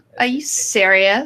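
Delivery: put-on Valley Girl voice. Showing off a voice they can do: stereotypical Valley Girl accent. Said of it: "do like a super stereotypical Valley Girl type one".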